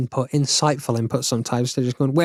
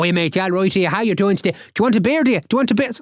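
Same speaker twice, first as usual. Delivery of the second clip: put-on thick drunken Irish accent, high and fast; 6 semitones higher than usual. Speaker imitates Connor walking up to people after a drink, strongest Irish accent. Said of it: "the strongest Irish accent".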